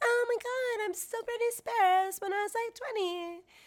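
shrill, very high, squeaky voice. Mocking a woman discussed for sounding young: imitating her squeaky voice. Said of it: "her squeaky voice, and it's like".

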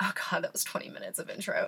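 fast, soft whispered aside.

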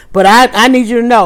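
ordinary talk

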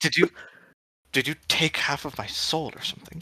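quiet, hushed voice. Player's character leaning in close to speak to the golem: hushed, leaning in close. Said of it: "I lean in close to the golem so as not to like frighten everyone else".

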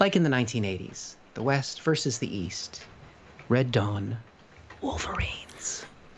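soft, calm voice. Speaker doing their own little ASMR bit, speaking quietly and calmly. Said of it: "I'm speaking quietly now, calmly".

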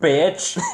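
bitch said with hard emphasis. Retelling what he told the woman he fell for: stress on 'bitch'. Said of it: "Why the emphasis on the bitch?".

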